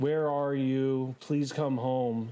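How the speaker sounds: very soft, quiet, hushed voice. Describing a voice heard calling names from your right, very soft voice. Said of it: "the voice you just hear very, very softly".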